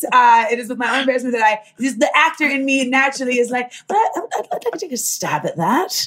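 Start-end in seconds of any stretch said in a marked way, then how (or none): 3.9-6.1 put-on pseudo British accent. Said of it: "my pseudo faux British accent".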